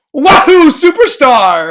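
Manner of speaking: very loud, blasting, high, mic-blowing exclamation. Asked whether they are a Mario fan, answering with a very loud exclamation. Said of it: "we might have blown out the audio".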